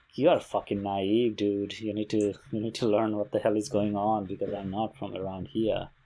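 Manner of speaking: ordinary talk, nothing marked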